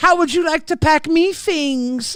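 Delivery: put-on New Zealand accent in a woman's voice. Voicing a woman in a scene, in a woman's Kiwi voice. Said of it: "I'm trying to make it a woman's Kiwi voice".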